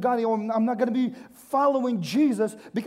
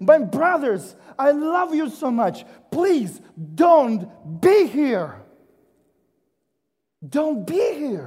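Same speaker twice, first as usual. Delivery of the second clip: mock-screaming, louder; 4 dB louder than usual. Speaker voicing a rich man addressing his brothers, retelling a scream. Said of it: "I'm screaming".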